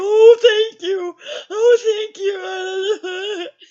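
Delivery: put-on hysterical sobbing, very high and very slow. Retelling when the door opened for a phone call, retelling own hysterical thanks. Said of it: "Calm down, calm down".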